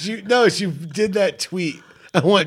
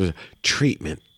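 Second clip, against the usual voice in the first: lower commercial announcer voice; 9 semitones lower, 4 dB quieter than usual. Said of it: "Just keep doing that voice".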